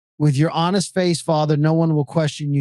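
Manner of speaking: usual speaking voice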